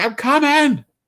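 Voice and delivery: put-on, shrill, very high-pitched shout. Retelling answering someone who yelled across the room: imitating own shouting.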